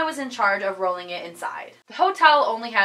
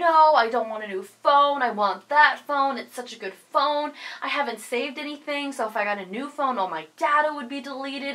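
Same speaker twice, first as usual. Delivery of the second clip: frantic, insistent screaming outburst, acted out; 3 semitones higher than usual. Retelling arguing with mom over a lost phone: imitating own screaming. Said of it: "I just kept screaming at her like".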